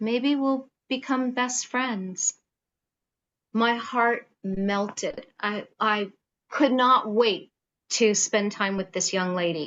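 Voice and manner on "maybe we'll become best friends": very quiet, hushed voice. Quoting what a young lady said at their first meeting, in a very quiet voice. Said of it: "in a very quiet voice".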